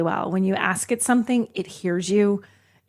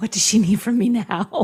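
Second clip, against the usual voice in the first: worn-out, put-upon, exhausted mother voice. Imitating the car's voice assistant sounding put upon: imitating an exhausted mother. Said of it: "It always sounded a little bit like".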